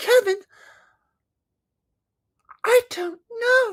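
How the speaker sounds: words dragged out slowly. Acting out a Kevin and Winnie scene, answering the boy: Winnie Cooper impression. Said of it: "That's my Kevin and Winnie impression".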